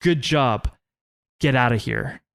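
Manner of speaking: put-on courteous, serious, stern, concerned, worried tone. Retelling what an older local man said to him, imitating polite, stern concern. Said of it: "a combination of polite, stern, and concerned".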